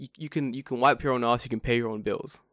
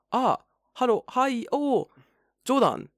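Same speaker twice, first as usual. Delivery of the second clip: very high, slow, hesitant, faltering, halting broken English; 12 semitones higher than usual. Retelling meeting a date with little English: imitating a date's hesitant English. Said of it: "She's like".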